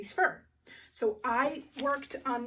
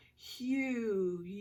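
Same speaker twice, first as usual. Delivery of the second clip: word sounded out slowly, stretched out; 4 dB quieter than usual. Sounding out a word slowly to hear its vowel, slow and stretched out. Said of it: "Let's say it slow".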